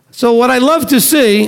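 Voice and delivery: sarcastic praise. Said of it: "I'm being sarcastic".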